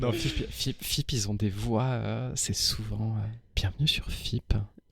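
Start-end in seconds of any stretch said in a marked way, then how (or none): 3.5-4.6 put-on asmr announcer voice, quieter. Describing how the FIP radio announcers talk, imitating one: FIP radio ASMR voice. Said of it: "C'est A S M R".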